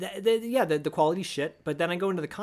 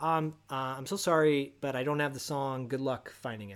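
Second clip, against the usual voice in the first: ordinary talk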